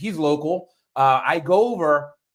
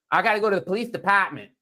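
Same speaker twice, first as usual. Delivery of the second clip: terrible put-on Boston accent, dropping Rs; 4 semitones higher than usual. Imitating how some people say the r sound: terrible boston accent. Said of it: "that's probably a terrible Boston accent".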